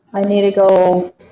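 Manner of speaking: normal talking voice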